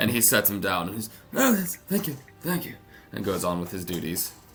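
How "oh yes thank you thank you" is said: put-on very high, elderly halfling character voice. Game master voicing a servant the giant sets down, elderly halfling servant voice. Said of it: "an elderly halfling servant".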